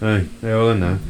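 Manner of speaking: plain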